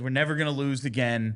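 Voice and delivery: ordinary talk, nothing marked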